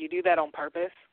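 play-acted, edgy, judgmental, doubting tone. Retelling how people react on hearing what they teach: imitating people's edgy tone. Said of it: "they have that kinda edge in their voice".

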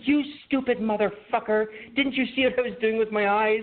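acted, very high, furious, angry yell. Retelling a family Password game ending in a fight: imitating mom's angry outburst. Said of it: "my mom is like".

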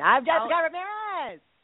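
very high, bright, acted-out yell. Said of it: "I'm always shouting".

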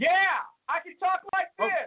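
very high projected voice. Answering a request to talk louder on the call: talking louder. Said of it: "is there any way you can talk louder?".

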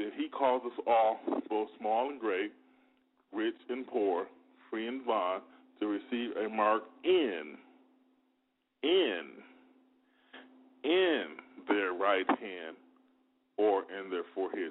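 slow, unhurried, deliberate reading-aloud voice. Going back to verse 16 to read it again, reading slowly. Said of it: "I want to read it slower".

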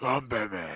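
distorted, intimidating masked-hero voice.

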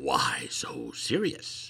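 breathy, menacing, creepy villain whisper. Explaining the idiom of the week, saying the phrase in the Joker's voice. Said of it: "say it like the Joker's voice".

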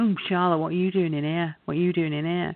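imitated teasing, taunting tone. Retelling how a boy teased a girl he recognised: imitating someone teasing. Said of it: "he was teasing her".

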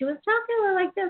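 imitated light, very high female voice. Speaker describing how a woman talked to her, imitating her higher voice. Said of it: "she had a higher voice than like".

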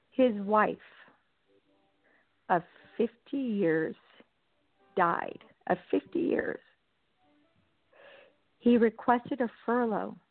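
voice on the verge of tears. Recounting an inmate's wife dying and his furlough request, on the verge of tears. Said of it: "I'm going to start crying".

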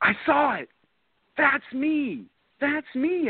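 imitated yelling. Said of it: "And she's yelling".

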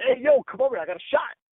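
frantic, high-pitched shout. Recalling the night Kobe Bryant tore his Achilles, calling over his camera guy: retelling a yell. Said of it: "I'm yelling at the camera dude".

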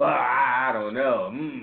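skeptical, doubting voice. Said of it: "they're way more skeptical".

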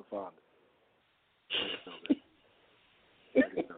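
whispered, breathy, sultry, seductive sexy voice. Teasing lafonda, telling her to let it go: sexy voice. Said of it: "let me say it in my, my sexy voice".

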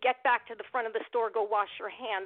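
ordinary talk

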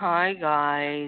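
very low, flat, mopey monotone. Telling the other speaker why they call them Eeyore, Eeyore-like mopey voice. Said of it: "we call you Eeyore is you come on and it's like".

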